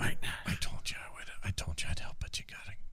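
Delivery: breathy whisper under the breath. In an elevator, answering the person who whispered in your ear: whispering. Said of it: "Why are you whispering?".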